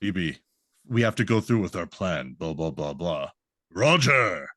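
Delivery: deep, low, serious character voice. Fan describing how a character used to talk, imitating his deep voice. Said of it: "he used to have like a deep like voice".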